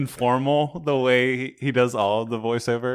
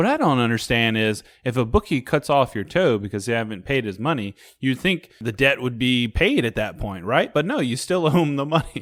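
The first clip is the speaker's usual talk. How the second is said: played completely straight, no added manner. Quoting a movie line to another speaker: deadpan Chevy Chase line. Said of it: "I do love his deadpan line".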